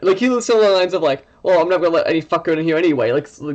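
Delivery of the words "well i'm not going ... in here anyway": mock sarcastic voice. Retelling what a game guard said at the door: imitating a very sarcastic guard. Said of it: "very sarcastic".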